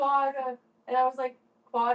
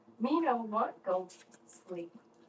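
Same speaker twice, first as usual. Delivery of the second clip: put-on caveman speech, lower and quieter; 4 semitones lower, 5 dB quieter than usual. Teasing the other speaker about using fewer words: mock caveman talk. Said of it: "Talking like a caveman".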